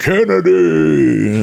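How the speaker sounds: loud shout projected from far back. Retelling how catering staff greeted him: imitating people yelling. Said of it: "People in catering yelling".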